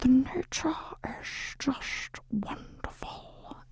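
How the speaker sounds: bad put-on nature documentary narrator voice. Offering to carry on a legacy, showing a terrible David Attenborough impression. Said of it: "I do think I can do quite a good impression of you".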